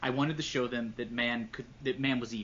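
plain

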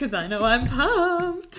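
sarcastic overdone excitement. Asking the other speaker about the NFL draft: sarcastic. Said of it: "you're being a little sarcastic right now".

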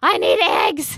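freaking out, shrill, very loud, high, frantic cry. Describing a player in the last round, like the Beauty and the Beast old woman. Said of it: "like that old woman in The Beauty and the Beast".

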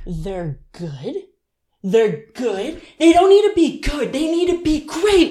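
exasperated, frustrated, high rising, building outburst. Recalling burnt cookies after someone tasted them, imitating her frustrated self. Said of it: "I was so frustrated".

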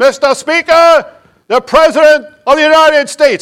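very high, loud, announcer-like yell. Retelling how the sergeant at arms announces the president, imitating someone yelling. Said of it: "he comes in and he yells".

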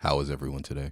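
eerie, unsettling, low put-on voice. During a mic check, a participant asked for a voice speaks first, creepy voice. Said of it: "that was creepy".

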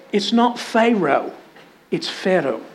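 imitated Scottish accent. Speaker quotes his wife correcting his pronunciation, in her scottish accent. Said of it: "My wife's from Scotland".

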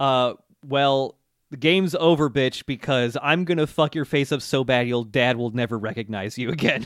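plain

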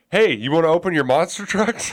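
put-on high, loud, childish toddler blurt.

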